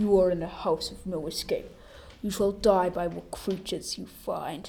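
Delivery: deep, low voice. Telling a scary story, the narrator quotes the friend's warning in a deep, low voice. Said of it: "said in a deep, low voice".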